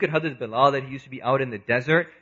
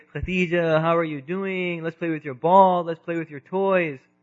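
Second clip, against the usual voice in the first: put-on fond baby talk in a little baby voice; 4 semitones higher than usual. A parent acts out a son greeting his sister, in a little baby voice. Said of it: "he starts to talk in a little baby voice".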